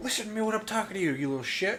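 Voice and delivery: very high, angry, scolding yell. Recalling a streamer's Halo days yelling at little kids: Ninja impression, mock yelling. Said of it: "he was yelling at little kids".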